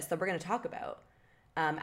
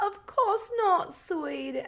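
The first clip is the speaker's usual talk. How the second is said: very high-pitched, poor fake British accent; 14 semitones higher, 4 dB louder than usual. Recapping a scene, voicing Jules's mom in a bad British accent. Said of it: "my British accent is really bad today".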